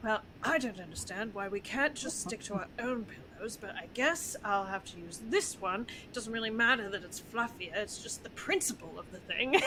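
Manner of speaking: muttered, grumbling under breath. Speaker acting out how a character would grumble, muttering under his breath. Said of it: "muttering it all underneath his breath".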